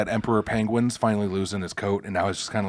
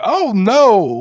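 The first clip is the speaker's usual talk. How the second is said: very high, very loud cartoon elephant squeal; 12 semitones higher, 10 dB louder than usual. Speaker describes a tough-looking bear's voice, doing it as an old cartoon elephant.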